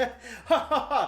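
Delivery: hearty, head-thrown-back belly laugh. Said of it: "He's throwing his head back laughing".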